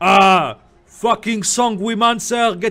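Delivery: shouting. Narrating the game, voicing him as he shouts after you walking out, shouting. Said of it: "he shouts after you".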